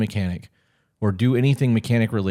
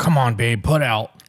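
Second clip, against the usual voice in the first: mock drunk voice with a surly attitude. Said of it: "alcohol in the breath, stinking fucking shitty attitude, going".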